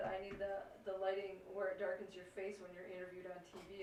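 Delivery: ordinary delivery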